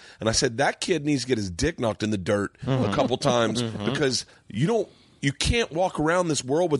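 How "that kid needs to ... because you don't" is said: ordinary talk, nothing marked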